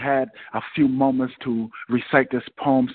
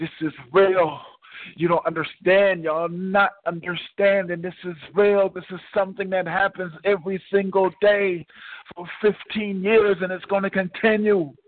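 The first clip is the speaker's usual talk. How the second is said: put-on, high-pitched screamed outcry; 6 semitones higher than usual. Retelling screaming to the crowd as mother covered the speaker's mouth: imitating own scream. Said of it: "And I screamed as my mother covered my mouth".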